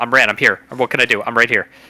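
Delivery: very fast, rapid-fire, rattled-off delivery. Playing a character who skids up beside his brother: very fast tone. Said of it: "I think I'll say in a very fast tone".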